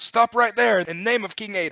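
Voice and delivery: very loud, high, commanding yell. Voicing a guard who points at the fleeing character: yelling guard in character. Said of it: "points and yells".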